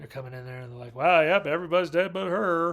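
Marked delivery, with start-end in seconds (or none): 1.0-2.7 New Jersey policeman voice. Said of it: "That's not my Jersey accent, but that's how I'm saying these New Jersey times".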